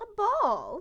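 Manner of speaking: put-on very high-pitched older woman professor voice. Telling a story, answering Lady Adalia in an older woman professor voice. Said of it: "the voice of this um older professor".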